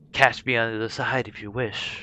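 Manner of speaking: hushed, whispering creature voice. Narrator voicing a creature taking Cecilia's soul into a portal, creature whisper. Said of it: "it kind of whispers to everyone".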